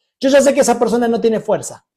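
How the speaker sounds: normal talking voice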